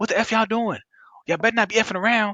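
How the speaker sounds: put-on yelling voice. Recounting a woman in a store yelling at her kids: imitating someone yelling. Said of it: "she's yelling at these kids".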